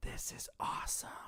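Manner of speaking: quiet, soft, breathy whisper. Retelling a friend leaning in during a movie: imitating a friend's whisper. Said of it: "he just whispers".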